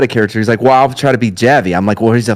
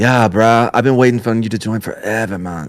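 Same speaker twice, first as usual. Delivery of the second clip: spaced-out burnout stoner dude voice; 3 dB quieter than usual. Imagining a silent character's voice for the group: burnout voice. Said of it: "like a burnout".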